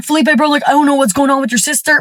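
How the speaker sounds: mock stammering. Retelling a phone call in which he talks to her brother: imitating someone stuttering. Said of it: "he starts stuttering".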